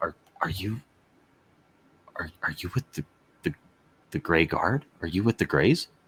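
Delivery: conspiratorial, leaning-in stage half-whisper. Voicing a watchman who leans in close to a player: half-whispering. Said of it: "leans in and whispers and is just like".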